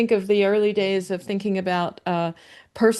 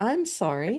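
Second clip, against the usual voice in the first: mock polite, apologetic chatbot voice, quieter; 2 semitones higher, 5 dB quieter than usual. Imitating the chatbot admitting a mistake: imitating a polite apologetic chatbot. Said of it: "You can just hear the little voice".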